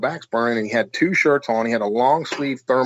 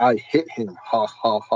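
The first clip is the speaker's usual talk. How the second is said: very slow, drawn-out ghost-box spirit voice. Retelling what a voice on the ghost box said: imitating a ghost box voice. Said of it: "a voice comes over the ghost box and says".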